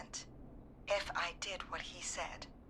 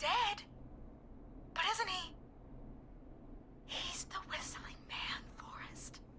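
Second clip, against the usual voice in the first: whispered, pitched very high; 11 semitones higher than usual. A character in a radio drama talks to Forrest about Clive, whispering. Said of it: "Why are you whispering?".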